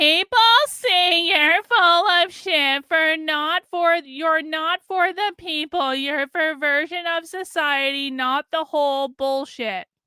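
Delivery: high, slow, screeching whiny mocking voice.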